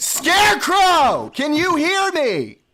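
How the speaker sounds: very high, very loud, shrill, swooping scream. On a call, after warning everyone, screaming for an unresponsive participant. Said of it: "I'm about to scream right now".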